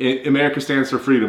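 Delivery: ordinary delivery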